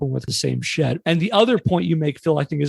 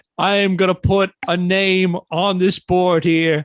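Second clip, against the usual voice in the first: put-on, heavily leaned-into New York accent; 3 semitones higher than usual. Acting out Keston entering the room and announcing a name, Keston in a New York accent. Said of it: "I'm going to lean into to more of a New York accent".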